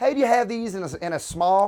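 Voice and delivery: very loud, put-on Southern US accent. Retelling how a friend asked a shopkeeper for a size, in a southern accent. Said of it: "we only spoke like that".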